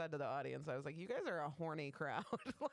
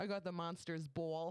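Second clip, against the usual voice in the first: put-on Midwestern accent. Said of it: "you are from the Midwest. I don't know where this accent".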